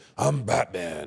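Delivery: raspy, hoarse masked-hero voice. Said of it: "That raspy".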